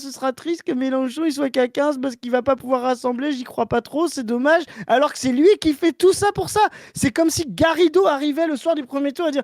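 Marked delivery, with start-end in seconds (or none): 0.0-4.6 put-on whiny voice. Speaker mocks Clément, calling him a hypocrite, imitating Clément whining. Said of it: "ce type est en train de chouiner en mode ah".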